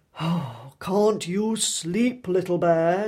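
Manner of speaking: loud, put-upon groaning. Reading Big Bear's line to sleepless Little Bear, groaning. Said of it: "groaned Big Bear".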